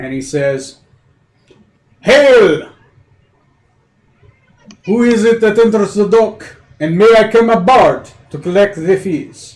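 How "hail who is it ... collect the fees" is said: loud, high call carrying across a distance. Voicing the harbor master hailing an arriving ship: harbor master calling out. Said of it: "calls out to you".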